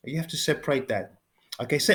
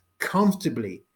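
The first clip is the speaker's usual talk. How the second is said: "comfortably" stressed and set apart. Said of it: "Emphasize the word comfortably".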